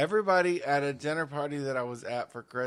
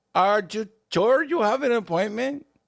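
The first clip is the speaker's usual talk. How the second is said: very loud, high, cranky, ornery voice; 9 semitones higher, 8 dB louder than usual. Retelling walking in to an ornery receptionist, imitating the receptionist. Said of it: "I'm doing her, by the way".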